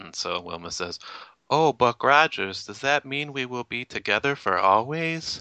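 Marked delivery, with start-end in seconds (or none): 1.5-5.4 put-on high, pitched-up, innocent childlike voice. Retelling a scene where Wilma, mimicking Laura, asks Buck Rogers: imitating Laura, childlike and innocent. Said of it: "she acts sort of childlike and innocent".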